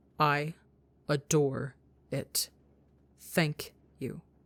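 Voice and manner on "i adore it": very slow, deliberate, precisely articulated. Rambu replies to Tebo in a moment that matters, very slow, carefully enunciated. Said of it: "very slowly, but with great enunciation".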